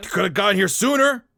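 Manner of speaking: very high-pitched, loud shout. As the three of you walk in, Ramses shouts out again: Ramses shouting. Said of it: "he kind of shouts out again".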